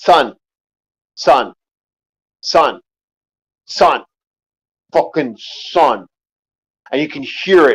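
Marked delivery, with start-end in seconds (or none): 0.0-6.1 acted, very slow calling out, darkening, turning aggressive. Retelling how a dad called his son while the boys hid: imitating a dad's voice growing aggressive. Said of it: "You could hear it in his voice".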